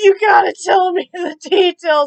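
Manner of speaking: loud, high pleading while laughing.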